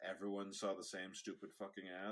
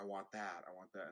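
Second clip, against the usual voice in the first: put-on acted demanding child voice, quieter; 4 dB quieter than usual. Speaker retells a child in stores wanting toys, imitating a child's demands. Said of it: "he'd be like".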